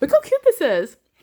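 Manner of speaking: giggly gushing, high and loud, laughing through words. Showing a craft to viewers, giggly. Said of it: "so giggly today".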